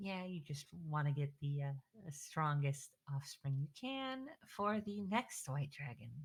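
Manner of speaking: muttered, hushed half-whisper under the breath. Muttering a jab in character so Vali overhears: half-whispering under breath. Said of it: "I whisper under my breath".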